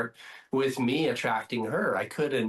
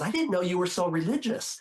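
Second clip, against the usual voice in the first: higher-pitched whispering; 6 semitones higher than usual. Telling a joke, voicing the girlfriend at dinner: retelling a whisper. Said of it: "his girlfriend whispers and says".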